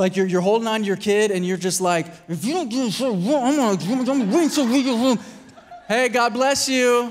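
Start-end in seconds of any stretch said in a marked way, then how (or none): 2.3-5.2 angry yell through clenched teeth, "I'm" drawn out. Acting out a parent holding onto their kid, mock yelling through clenched teeth. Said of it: "yelling at me through clenched teeth".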